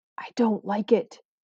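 soft, hushed whisper under the breath. Clutching the narrator's arm outside the manor house, she whispers. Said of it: "she whispered".

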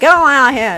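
very loud, high Texas ranch-hand accent. Saying a short phrase with the texas accent it needs: texas rancher accent. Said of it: "you gotta have the Texas accent on it".

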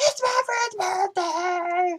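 mock very high, slurring, drawn-out drunk yell. Retelling a drunk concertgoer's repeated yell: imitating a drunken slurred yell. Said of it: "drunken slur".

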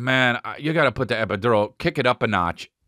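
ordinary talk, nothing marked

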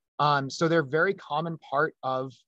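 ordinary delivery

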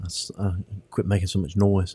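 speaking in a whisper. Talking quietly while someone nearby is waking up: whispering. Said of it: "I have to whisper".

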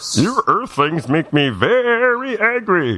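very high, squeaky, sing-song alien voice, stretched out. Chatting in a group, the speaker delivers a line in a cartoon Martian voice. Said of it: "I love that voice".

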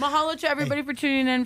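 words pushed through chewing food. Show host signing off to viewers: talking with mouth full. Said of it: "I've got malasada in my mouth".

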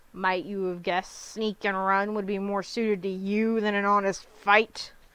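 contemptuous, sneering, scornful jeering tone. Narrator reads the armsmaster mocking Vanyel: sneering. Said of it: "The armsmaster sneered".

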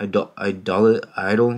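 ordinary delivery

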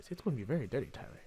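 put-on sexy voice. Speaking to the other person in the video about Tumblr, in a put-on sexual voice. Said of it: "That's my sexual voice".

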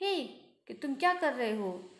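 nervous, anxious, panicked yelling. Translating a story aloud, voicing the narrator's own cry: nervous shout. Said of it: "बहुत घबराते हुए मैं चिल्ला रहा हूँ".

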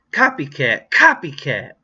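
loud, angry, jeering, swooping cry. Squabbling with a rival over ventriloquist dummies, one cries out angrily. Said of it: "Lindy cried angrily".

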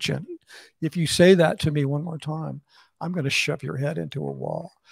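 hushed, very quiet, dead-even threatening tone. Retelling getting in someone's face: imitating a quiet, calm threat. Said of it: "I very quietly and calmly, I said".

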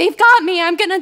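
high, loud, frantic panicked screaming. Recounting being grabbed by hands inside a box, retelling a panicked scream. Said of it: "I'm screaming".

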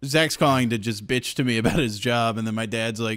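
ordinary talk

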